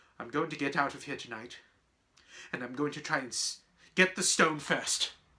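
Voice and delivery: ordinary delivery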